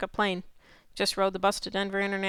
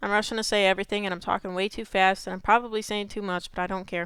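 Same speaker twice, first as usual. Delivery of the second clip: plain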